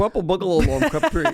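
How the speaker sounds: put-on high Scottish accent. Told the phrase must be said in a scottish accent, trying it; scottish accent. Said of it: "you have to do it in a Scottish accent".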